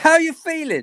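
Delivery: put-on very high-pitched northern English accent. A Sunderland fan surrounded by Arsenal fans asks the other fan, northern accent. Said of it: "says in his northern accent".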